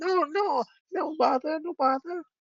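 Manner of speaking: very high, squeaky, drawn-out kobold squeal. Voicing a young kobold answering an elder: squealing young kobold. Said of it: "the younger one squeal".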